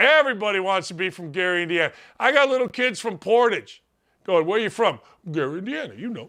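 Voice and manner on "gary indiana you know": soft, put-on neighborhood voice faking local speech.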